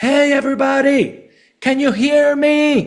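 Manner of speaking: put-on very high, stretched-out, drawn-out scream. Retelling calling out to a big room without a microphone: retelling a scream. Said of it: "I came out and I screamed".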